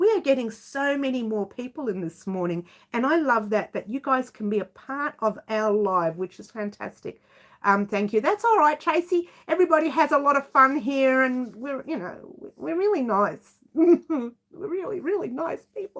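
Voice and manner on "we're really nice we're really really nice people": high voice, laughing and giggling through the words. Telling viewers how nice everyone here is, laughing while talking. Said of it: "I can't even say that without laughing".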